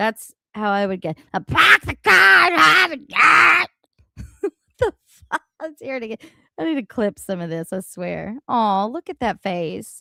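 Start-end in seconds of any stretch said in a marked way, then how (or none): 1.4-3.7 loud, high, half-passable Boston accent. Showing how they would say the phrase themselves, in a put-on Boston accent. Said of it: "I can even kind of do it".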